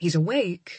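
ordinary delivery, nothing marked

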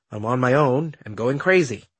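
plain reading voice

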